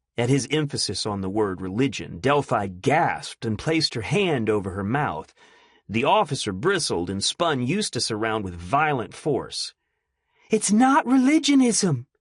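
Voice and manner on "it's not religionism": airy, breathy, thin, very high-pitched voice. Narrator reads a woman answering Eustace: breathy, thin voice. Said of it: "she said in a breathy, thin voice".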